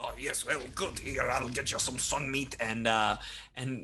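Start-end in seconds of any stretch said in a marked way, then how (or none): 0.0-2.5 generous, obliging character voice. Voicing an NPC who greets the players after the building melts: voicing Kojin Hackhands. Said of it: "it just offers free sun meat".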